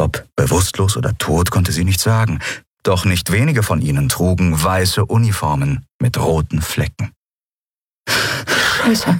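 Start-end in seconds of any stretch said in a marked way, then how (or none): 8.1-9.2 gasping, panting, out of breath. A woman sees bodies lying in the square and swears, panting. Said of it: "keuchte sie".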